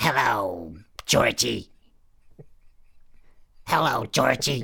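very loud, belted clown voice. Offering to show a practiced impression, the speaker does a Pennywise impression. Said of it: "I've been practicing my Pennywise impression".

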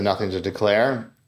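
ordinary talk

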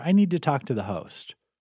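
ordinary delivery

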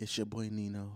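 very hushed, soft, slow gentle voice. Repeating a podcast intro line in a soft gentle voice. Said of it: "I'm doing the soft voice now too".

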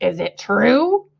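wary, distrustful, suspicious and doubtful tone. Narrator reading the rat asking about the egg sack, suspicious. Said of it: "eyeing the sack suspiciously".

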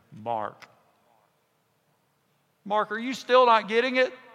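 animated, high, pressing, lively up-and-down pitch. Imagining the words in these verses spoken to oneself: voicing Jesus. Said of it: "Maybe it sounds like this".

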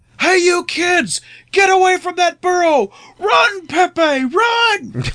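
put-on very high yell, stretched long and drawn-out. Recalling rolling down the car window for shock value, retelling own screaming. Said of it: "start screaming".

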